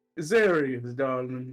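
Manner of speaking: projected, booming voice thrown out to carry far. Voicing a character who projects his voice with thaumaturgy: magically projected voice. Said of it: "uses thaumaturgy to project his voice out a bit".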